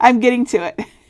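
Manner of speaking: spoken through laughter. Replying to Chris mid-demonstration, laughing.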